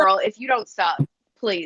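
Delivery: normal talking voice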